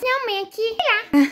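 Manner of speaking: put-on high-pitched little boy voice.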